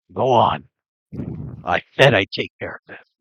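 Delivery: voice of a giant stone creature. Voicing a stone giant who grabs a fiend: Grindcrag's voice. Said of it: "you hear the voice of Grindcrag".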